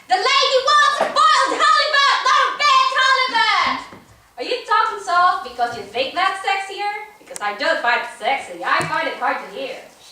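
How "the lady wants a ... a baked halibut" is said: very high, loud, shrill yelling. Telling someone she hears them yelling in the restaurant, imitating their yelling. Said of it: "I hear you yelling a lot in the restaurant".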